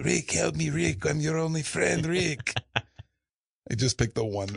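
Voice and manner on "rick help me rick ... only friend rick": vintage film character-actor voice, high, creaky, rough. Asked whether you can do an old movie actor, answer with a Peter Lorre impression. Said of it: "can you do a Peter Lorre impression?".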